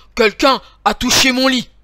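big, gruff, growling bear voice. Narrator reading the big bear seeing his bed was touched, in a big growling bear voice. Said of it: "le grand ours grogne de sa grosse voix".

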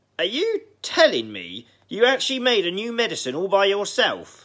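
shrill, very high, loud disbelieving yell. Grandma on the roof questions George down below, shouting. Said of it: "she shouted".

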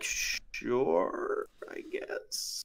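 unvoiced, reluctant, barely agreeing whisper.

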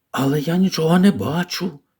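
whispering. Colin speaks to Mary beside the ivy, whispering. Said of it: "прошепотів він".

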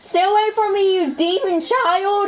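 cracking voice. Yelling at something in a panic: voice cracking. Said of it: "I had a voice crack".

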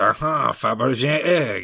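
mock upper-class French accent. Recalling a movie's main bad guy and quoting him: posh Frenchy villain accent. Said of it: "sort of Frenchy, but he's got a posh accent".

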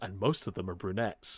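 soft, hushed half-whisper. Retelling a line from an episode: imitating Gohan half-whispering. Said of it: "whispers over and he goes".

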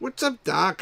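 high cartoon rabbit voice. Reading the back of a game aloud, speaker tries the rabbit's line in Bugs Bunny voice. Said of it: "I can't do Bugs Bunny's voice".

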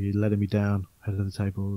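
barely audible, very quiet half-whisper. Mocking how quietly the wrestler speaks on the mic: imitating Roman Reigns half-whispering. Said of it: "totally whispering into the microphones".

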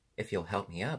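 ordinary delivery

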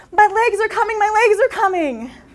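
high, excited, joyful yelling at full volume. Retelling a little girl jumping on her bed: imitating an excited shout. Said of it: "shouting at the top of her lungs".

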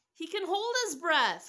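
very high-pitched, loud crying out. Elliot to the doctors after they report no breath; crying out. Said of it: "cried Elliot".

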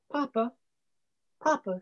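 shy, hesitant, timid, soft calling voice. A boy pushing open the door to his father's study, timid. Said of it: "timidly pushing open the great door".

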